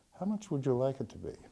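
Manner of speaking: very soft, hushed, barely voiced, very quiet. Telling a joke, voicing the lawyer answering the committee, in a very soft voice. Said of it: "says in a very soft voice".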